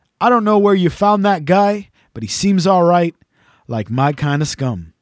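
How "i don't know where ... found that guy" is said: usual speaking voice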